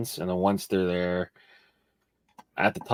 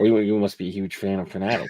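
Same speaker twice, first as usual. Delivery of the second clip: ordinary delivery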